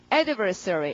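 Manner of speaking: adversary with stress on first syllable ad. Vocabulary lesson on pronouncing adversary, stress on first syllable of adversary. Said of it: "강세가 앞이거든요".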